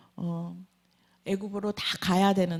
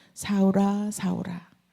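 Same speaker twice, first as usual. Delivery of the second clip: gentle, tender, put-on affectionate calling voice. Acting out a divine call, not loudly, acting out a very tender call. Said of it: "큰 소리로 부르지 아니하고 굉장히 다정한 목소리로".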